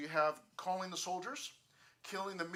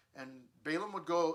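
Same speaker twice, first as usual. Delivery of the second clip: usual speaking voice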